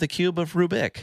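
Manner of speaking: very high-pitched voice with a slight lisp. Quote a figure who is trying to be intimidating, in Hank Azaria's accent with slight lisp. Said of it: "hilarious accent with just a slight lisp".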